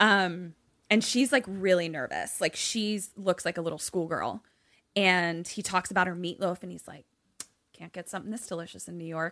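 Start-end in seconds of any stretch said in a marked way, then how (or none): 7.7-9.3 playful, flirtatious, charming tone. Retelling a dinner scene, praising her meatloaf: imitating a flirty compliment. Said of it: "a real flirt".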